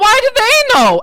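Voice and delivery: piercing shriek, very high and very loud. A player's character says this aloud and the others hear only screaming: screaming. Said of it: "we just hear screaming".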